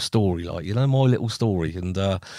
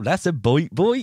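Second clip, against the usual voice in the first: put-on New Forest accent, raised pitch; 6 semitones higher than usual. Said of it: "Even the Liverpudlians".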